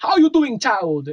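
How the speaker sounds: put-on, very high, cool voodoo accent lilt. Retelling a call to Turbine support, imitating the lady's voodoo accent. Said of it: "this like cool like voodoo accent".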